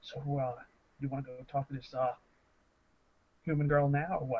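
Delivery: hushed, in-character half-whispered aside. Speaking in character with mouth covered, head turned to another player: half-whispering in character. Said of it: "and kinda whispering".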